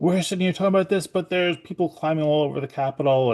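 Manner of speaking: put-on furious yelling outburst, high, angry screaming. Speaker recalls the night people climbed the Capitol, retelling screaming at the kids. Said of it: "I was like screaming at them".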